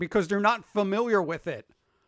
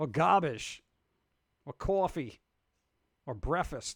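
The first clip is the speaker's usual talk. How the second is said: put-on New York accent, quieter; 4 semitones lower, 4 dB quieter than usual. Asked about the accent, the speaker tries out words in a new york accent. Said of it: "Do I not sound New York enough".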